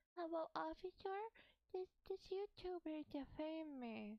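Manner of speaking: cringey put-on baby voice, baby talk. Acting out an imagined scene for chat, playing the toddler: cringe baby voice. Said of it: "I'm gonna do my cringe baby voice".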